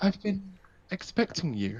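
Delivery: refined feminine voice, not too high, slightly lifted. Voicing a figure speaking suddenly within the room: well-spoken womanly voice, not too high. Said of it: "you hear a very well-spoken, like, not too high-pitched, but, like, very womanly voice".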